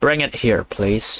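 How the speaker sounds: usual speaking voice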